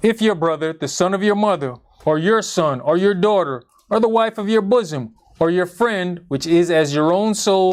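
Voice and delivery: ordinary talk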